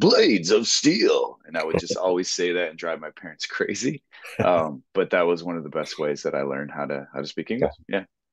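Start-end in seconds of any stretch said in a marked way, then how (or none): 0.0-1.4 hyped, loud, high video game announcer voice. Speaker recalls a childhood hockey video game, doing the Blades of Steel announcer voice. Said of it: "how the announcer would be like".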